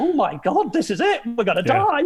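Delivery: worked-up, emotional voice. Retelling a tearful send-off before the trip, imitating own emotional past self. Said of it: "I'm getting all emotional going".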